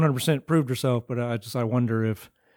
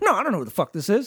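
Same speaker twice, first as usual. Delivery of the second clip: pissed-off, angry outburst, pitched up; 7 semitones higher than usual. Retelling a movie scene on a beach football game: imitating Roach getting pissed off. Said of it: "Roach gets all pissed off and gets in his face".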